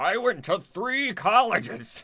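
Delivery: shrill, very high, loud shrieking cartoon voice. Chatting about college, the speaker does a Plankton voice. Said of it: "That's Plankton".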